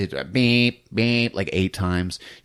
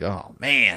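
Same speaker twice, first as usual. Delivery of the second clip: squirming, cringy, awkward embarrassed tone. Retelling a movie scene where a character reacts: imitating a cringing reaction. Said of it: "all cringy".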